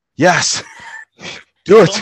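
very high, loud, winded gasping and panting. Acting out a reply after a long jog: fake out-of-breath answer. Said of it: "simulating, uh, real life response after jogging ten Ks".

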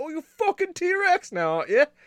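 worst possible fake British accent, very high. Mocking a T-Rex in a cartoonish bit, speaker uses the worst possible British accent. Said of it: "That's just like the worst accent possible".

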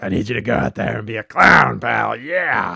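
loud, rough-voiced rasp. Retelling someone else's impression of the wrestling boss: Vince McMahon impression. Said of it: "He was doing a Vince impression".

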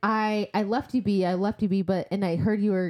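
normal talking voice

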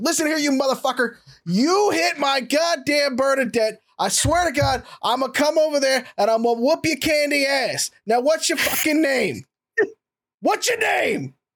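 furious, angry, high-pitched yelling tirade. Retelling how a man started yelling at the Rav; retelling a yell. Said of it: "just start yelling at the Rav".

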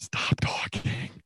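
hushed, slow whisper.

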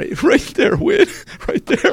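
mock very high trembling voice, holding back tears. Retelling pointing out the heckler to the headliner: imitating a trembling-lipped voice. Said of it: "My lip is trembling".

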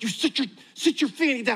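angry, fierce, scolding stage whisper. Recalling a grandmother scolding in church, imitating an angry whisper. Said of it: "angry whisper".

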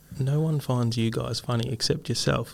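ordinary talk, nothing marked

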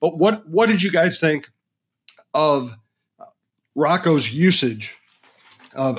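slow, halting, choked-up voice catching and breaking. Speaker asks the guys a question mid-discussion; choking up. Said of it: "i'm sorry i'm choking up here a little bit".

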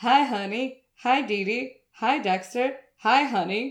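very slow, oblivious drawl, each word drawn out. Retelling the dad walking past everyone in line: imitating Dexter's dad. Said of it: "and he's like".

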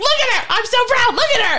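put-on very high, gushing, proud scream. Retelling cheering for her at a show: retelling own screaming. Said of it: "And I'm screaming".

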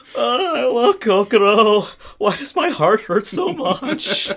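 put-on shrill, very high, loud squeaky teen voice. Recapping an episode, voicing a crying boy's lines as a squeaky teen voice. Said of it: "make him sound like squeaky voice teen".

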